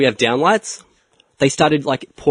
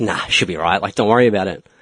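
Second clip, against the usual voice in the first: casual, unbothered, nonchalant, offhand, dismissive tone; 4 semitones lower than usual. Retelling a workman's reply to a safety warning: imitating a nonchalant reply. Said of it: "he gave me that real nonchalant".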